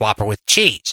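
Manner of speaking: put-on man's voice, like over an intercom. Imitating someone saying an order over the intercom, Mike's voice. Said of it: "that was his voice".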